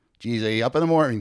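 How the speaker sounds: put-on Canadian accent. Retelling how a man would greet him in the mornings: Canadian accent. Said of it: "with more of a Canadian accent".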